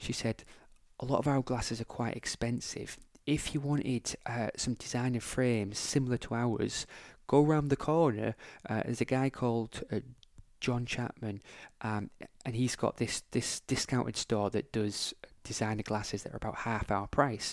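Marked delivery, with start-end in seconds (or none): 1.0-17.5 hushed, confiding, confidential stage whisper. Retelling what a receptionist said in an optometrist's shop: imitating a half-whispering receptionist. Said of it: "and she was whispering".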